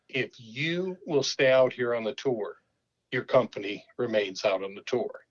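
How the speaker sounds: ordinary delivery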